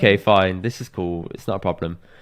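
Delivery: ordinary talk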